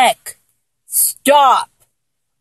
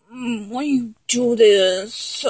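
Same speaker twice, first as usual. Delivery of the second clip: very slow pouty sulk, this stretched; 3 semitones lower, 7 dB quieter than usual. Talking back to someone who asks for neck kisses, in a pouty voice. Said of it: "when I talk back to you in that pouty voice too".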